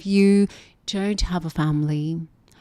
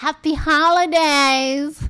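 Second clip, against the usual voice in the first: American accent with very high pitch; 10 semitones higher, 4 dB louder than usual. Showing how Americans say happy holidays, in an American accent. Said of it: "You gotta love how Americans say it".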